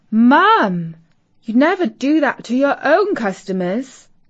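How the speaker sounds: shocked, horrified and appalled. A daughter responds to her mother's admission, horrified. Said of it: "Katie was horrified".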